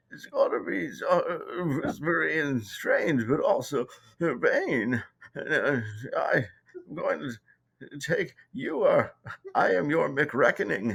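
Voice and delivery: weird raspy blend of two voices at once. Trying out a mashup voice for a planned sketch character: RFK Jr. and Bane mashup voice. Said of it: "trying to get the voice of Bain and R F K".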